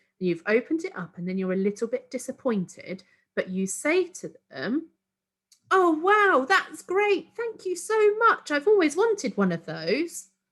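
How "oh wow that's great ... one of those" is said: fake gushing excitement, very high and loud. Demonstrating thanking someone for a disappointing present, fake excited. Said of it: "in my tone of voice, it sounded like I was excited".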